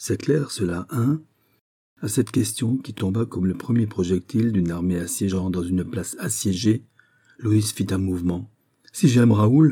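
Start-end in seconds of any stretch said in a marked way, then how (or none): 8.9-9.7 sudden, exclaimed outcry, cried out. Asked whether she loves her childhood friend, a woman answers, crying out. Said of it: "S'écria-t-elle".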